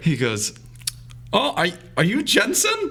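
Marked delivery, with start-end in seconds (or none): 1.3-2.9 put-on German accent, very high and swooping. Speaker quotes a man met on a trip, imitating Ernest's German accent. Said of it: "should I try to do a German accent?".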